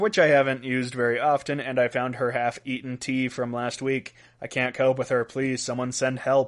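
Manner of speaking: usual speaking voice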